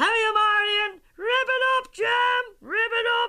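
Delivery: very high, loud yell.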